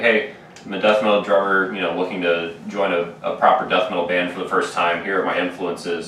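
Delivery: ordinary talk, nothing marked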